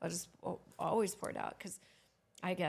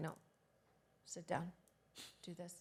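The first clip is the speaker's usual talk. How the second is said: put-on calm man voice, much quieter; 9 dB quieter than usual. Describing how Tony answers people coming at him at his events, imitating Tony staying calm. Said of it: "He doesn't lose his cool".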